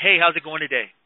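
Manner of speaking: direct, assertive, plain, businesslike, blunt delivery.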